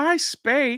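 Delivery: very high-pitched, squeaky character voice. Asked for a best Jar Jar impression, quoting a favorite line: Jar Jar Binks impression.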